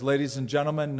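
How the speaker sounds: normal talking voice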